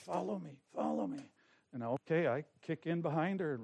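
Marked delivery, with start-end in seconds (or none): 0.0-1.2 mimicked side-of-mouth speech, quieter. Retelling what a lady at the door said: imitating talking out the side of the mouth. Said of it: "she's kind of talking out the side of her mouth".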